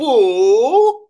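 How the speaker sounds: put-on "boo" drawn out long and loud, Swiss accent. Joking about a coach turning around on the bench, booing in a swiss accent. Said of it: "That's my Swiss accent".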